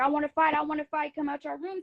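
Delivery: mock light calling-out yell, repeated. Retelling coming to their room to fight: imitating her own yelling.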